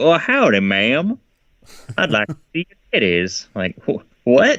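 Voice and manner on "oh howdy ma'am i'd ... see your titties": southern drawl, pitched a touch high. Retelling a surprising role, doing Cary-Hiroyuki Tagawa's southern accent. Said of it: "Cary Hiroyuki Tagawa's southern accent".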